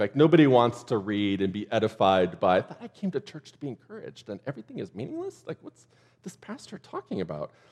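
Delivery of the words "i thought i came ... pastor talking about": very soft, hushed inner voice. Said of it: "that was Jim Gaffigan".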